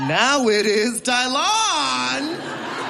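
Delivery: grand, delighted proclamation, high, slow and drawn out.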